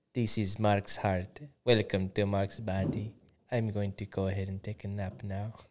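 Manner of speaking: soft, quiet, flat, bored French narrator drone. Voicing Mark's heart as if it were talking, in a bored French SpongeBob narrator voice. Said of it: "bored French voice from SpongeBob".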